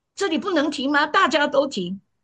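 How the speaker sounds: high, indignant, pushing-back tone. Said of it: "说大家都这样，这我们最爱讲的话".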